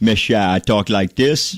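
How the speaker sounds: put-on Louisiana drawl. Recalling how he spoke before losing it in college: imitating own old louisiana drawl. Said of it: "I did have that".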